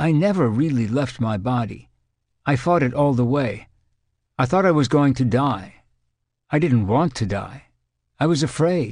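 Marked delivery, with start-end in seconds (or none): none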